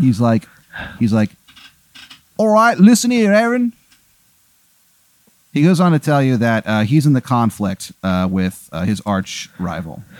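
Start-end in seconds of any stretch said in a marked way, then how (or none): 2.4-3.7 high, terrible fake English accent. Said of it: "He has a terrible accent".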